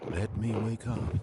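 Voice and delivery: normal talking voice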